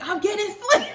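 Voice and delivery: frantic, panicked, very high-pitched cry. Recalling being given the gas and yelling at him, retelling a yell. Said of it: "I started yelling at him like".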